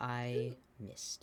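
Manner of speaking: hushed whisper. A character appears next to Cirrus and whispers to her, whispering. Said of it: "whispers to her".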